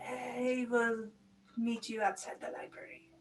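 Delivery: rough, gravelly character voice. In a tabletop game, a character answers through a spell: gravelly voice. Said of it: "gravelly kind of voice".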